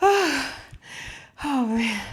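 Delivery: out of breath, panting. Mid-workout, just before the wall stretches: out of breath. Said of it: "Let me catch my breath".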